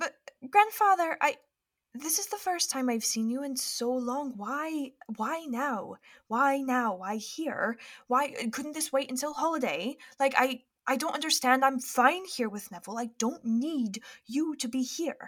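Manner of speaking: private, confidential, secretive-sounding speaking tone. Voicing a granddaughter speaking to her grandfather, overheard through a wall, hushed tones as Penny. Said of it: "They're speaking in hushed tones".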